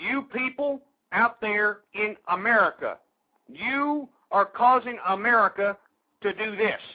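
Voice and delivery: very slow, deliberate, drawn out word by word. Addressing the audience out there in America: talking real slowly. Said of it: "I'm going to talk real slowly".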